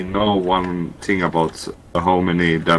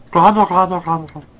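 turkey voice, much higher pitch; 11 semitones higher, 4 dB louder than usual. Repeating the bit a listener just called a turkey impression, turkey impression. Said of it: "Is that your impression of a turkey?".

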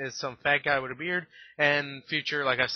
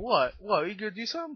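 play-acted, confrontational, goading, in-your-face taunt, pitched up; 7 semitones higher than usual. Retelling a ghost getting up in Scrooge's face: imitating an in-your-face taunting ghost. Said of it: "he gets all up in his face".

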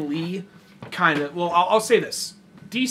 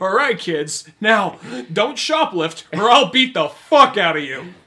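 very loud, intimidating, threatening bark; 3 semitones higher, 8 dB louder than usual. Acting out a hero warning kids not to shoplift: pretend Batman intimidating kids. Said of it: "totally intimidation by fear".

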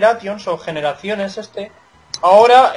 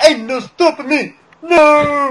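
put-on Bronx male street voice, high and slow; 7 semitones higher than usual. Showing how a line has to be said, put-on bronx guy voice. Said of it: "hay que decirlo con voz".

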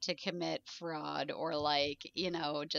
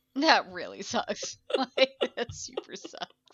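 talking through laughter, swooping pitch; 4 semitones higher, 4 dB louder than usual. Agreeing with another speaker about someone's bad luck: laughing while talking. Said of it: "I promise I'm not laughing because it's funny".

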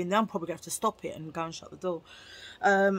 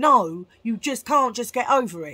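raised, forceful, slightly aggressive insistence; 3 semitones higher, 7 dB louder than usual. Telling viewers people can't just get over it: sounding a bit aggressive. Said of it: "I sound a bit aggressive there".

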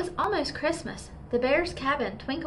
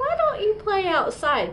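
chuckling, bright and swooping; 8 semitones higher, 6 dB louder than usual. Papa, just hit by a snowball, speaks to his cubs, chuckling. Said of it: "chuckled Papa".

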